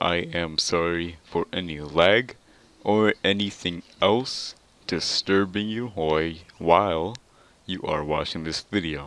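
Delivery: said really slow and drawn-out.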